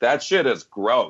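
put-on, offhand, blunt, blurted outburst. Retelling what a lady in the theater said during the kiss: imitating a loud remark. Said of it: "Real loud".

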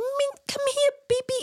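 sweet, very high, slow cooing voice. Retelling crouching to call a lost dog back in the woods, dog voice. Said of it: "You know the dog voice that you do?".

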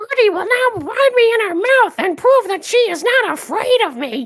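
horrible put-on toad voice. Describing old cartoon footage, voicing the toad gertie meets: horrible toad impression. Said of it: "my horrible Toad impression".

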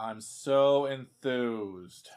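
sarcastic, exaggerated put-on enthusiasm. Giving a gin drink recipe on camera, sarcastic enthused voice. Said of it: "This is my enthused voice".

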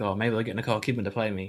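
ordinary talk

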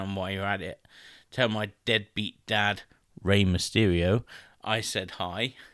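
ordinary talk

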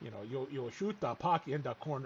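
acted strong Canadian accent. Speaker recounts someone who made them roll laughing, imitating Brother Henri's hard Canadian accent. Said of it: "adapt this really hard accent and start talking in the accent".

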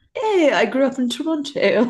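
put-on high, slow, drawling posh English accent. Joking that a Canadian actress says she grew up in Toronto: Gillian Anderson's fancy English accent. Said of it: "a really fancy English accent".

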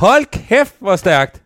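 loud, high-pitched, thrilled and overjoyed yell. Hearing that the other speaker is becoming a father again: shouting. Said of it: "fordi jeg råber".

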